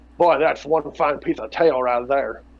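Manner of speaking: bad voice that sounds like a duck. Voicing a thought aloud as the American Dream: American Dream voice sounding like Daffy Duck. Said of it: "sounds like Daffy Duck".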